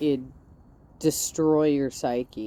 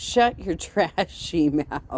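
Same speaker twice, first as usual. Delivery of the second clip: ordinary talk, nothing marked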